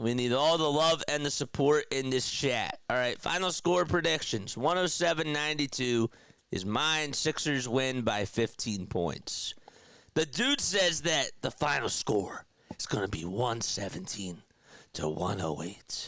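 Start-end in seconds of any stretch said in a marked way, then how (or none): 11.4-16.1 voiceless, breathy, hushed whisper. Relaying another person's final score prediction, whispering. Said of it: "Why did I start whispering?".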